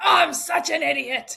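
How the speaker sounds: loud, drawn-out yell. Retelling how a husband yells at himself in the kitchen: imitating someone yelling at himself. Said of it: "yell at himself, like".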